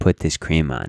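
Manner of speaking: put-on firmness. A father retells what he says to his daughter, retelling a firm voice. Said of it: "with a certain firmness in my voice".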